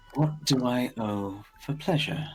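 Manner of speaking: quiet, hushed tone. In a role-play scene, the speaker repeats a line in a hushed voice. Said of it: "I'm going to keep a hushed voice and repeat".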